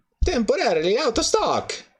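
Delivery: chirpy cartoon character voice. Host live online, reacting to a third-party website, Mario voice. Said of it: "I keep doing the Mario voice".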